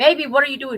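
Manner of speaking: loud, shouted, yelled delivery. Retelling how a partner called from the living room: imitating someone screaming. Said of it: "he screamed from the living room".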